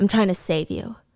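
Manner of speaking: imitated whisper. Retelling a scene from a book, quoting his line: imitating a whisper. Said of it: "so he whispers".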